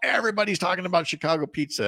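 mock triumphant, sarcastic tone.

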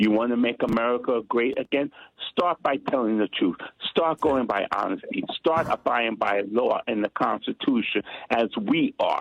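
usual speaking voice

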